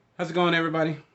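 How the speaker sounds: really loud, high-pitched voice. Greeting everybody at the start of a movie review: loud greeting. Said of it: "I feel like I said that really loud".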